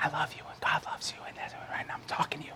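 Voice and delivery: quiet whispering. Speaker shows the room how a whisper fails to carry, whispering. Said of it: "you can't hear me because I'm whispering".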